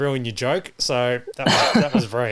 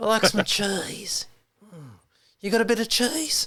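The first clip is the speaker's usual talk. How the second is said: put-on menacing outback voice, higher; 8 semitones higher, 4 dB quieter than usual. Joking around with others, doing a bad impression of the Wolf Creek guy. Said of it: "I'm sorry for my bad impressions".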